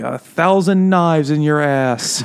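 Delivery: loud, drawn-out shouting. Retelling a powerless god's curses that nobody can hear: imitating someone shouting curses. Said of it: "shouting these things".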